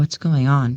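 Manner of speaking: soft, hushed half-whisper. Asking in character what is going on after hearing distant arguing: half-whispering. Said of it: "I kinda whisper".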